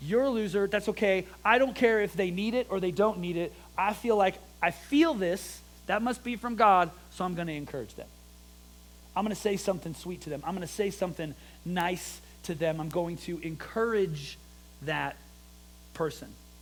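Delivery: ordinary talk, nothing marked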